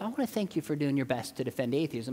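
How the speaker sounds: ordinary talk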